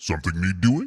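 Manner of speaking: voice dropped low and pushed out loud. Told their voice could pull off an orc boss, the speaker tries it: Warhammer orc boss voice. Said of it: "could pull off the Warhammer twenty K orc boss".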